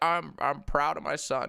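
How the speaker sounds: slow, dragged-out, rough and creaky voice. Imagining a father's reply to the livestream: Joe Biden impression. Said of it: "Joe Biden would be like".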